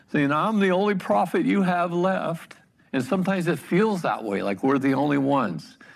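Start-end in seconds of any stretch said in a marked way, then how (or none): 0.3-2.5 put-on disheartened, put-upon whine, pitched high. Speaker imagines Elijah complaining to the Lord: imitating Elijah's whiny voice. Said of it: "I can imagine in a whiny voice".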